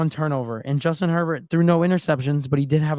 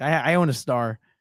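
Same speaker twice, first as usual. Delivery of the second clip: plain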